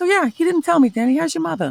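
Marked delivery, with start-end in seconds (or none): 0.9-1.7 put-on Boston accent, higher. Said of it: "talk specifically like Mark Wahlberg".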